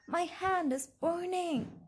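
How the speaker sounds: high, pained scream, crying out in agony. Reading a novel aloud, the narrator speaks to him, screaming. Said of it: "I screamed".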